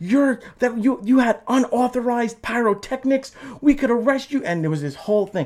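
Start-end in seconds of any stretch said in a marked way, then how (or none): 0.0-4.4 play-acted shrill, high, slow, drawn-out yelling. Retelling how staff confronted the band over pyrotechnics: imitating someone yelling. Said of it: "they were yelling at me".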